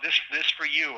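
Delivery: put-on accented, broken English speech. Retelling a prisoner handing over a gift: imitating broken English accent. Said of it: "broken accent".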